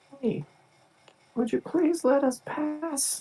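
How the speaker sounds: full-volume, high-pitched yelling at top of lungs. Playing a character calling out to a distant figure: shouting as loud as possible. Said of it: "I just shout basically as loud as I can".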